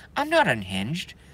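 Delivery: ordinary delivery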